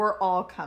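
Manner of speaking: normal talking voice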